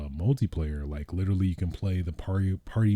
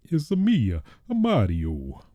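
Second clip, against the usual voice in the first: very slow, sing-song, swooping up and down cartoon voice; 4 semitones higher, 3 dB louder than usual. Talking about Super Mario Party, the speaker tries his best Mario impression. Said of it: "My best impression of Mario".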